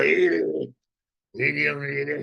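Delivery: put-on creaky, unthreatening, harmless grandfatherly voice. Speaker acting out how he'd greet a passing woman, put-on grandfatherly, unthreatening voice. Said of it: "in a grandfatherly way".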